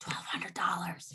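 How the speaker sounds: confiding, secretive stage whisper. Speaker tells the guys something they don't want anyone else in the house to know; whispering. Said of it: "I have to whisper it".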